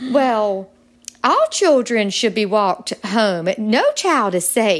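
loud Southern accent, acted. Retelling what friends said about walking children home: imitating friends in a Southern accent. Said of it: "I gotta play the part".

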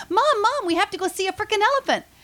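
put-on loud, very high, thrilled, excited little-girl voice. Retelling a little girl at the zoo calling her mom: imitating an excited little girl. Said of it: "She was so excited".

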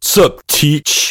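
put-on full-on eighties movie teenager voice. Playing a student greeting the teacher: 1980s John Hughes teenager voice.

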